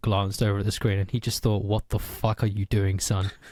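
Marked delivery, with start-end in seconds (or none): 1.6-3.3 acted-out stunned, bewildered, dumbfounded tone. Retelling what a dad said when he saw the screen: imitating a dumbfounded dad. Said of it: "he was just dumbfounded".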